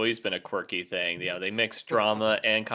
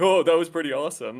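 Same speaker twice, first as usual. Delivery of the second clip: mocking, unintelligent-sounding, dim-witted soldier voice; 7 semitones higher, 4 dB louder than usual. Mocking how a soldier character talks: mocking unintelligent soldier voice. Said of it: "they don't fucking talk like this".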